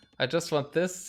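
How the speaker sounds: ordinary talk, nothing marked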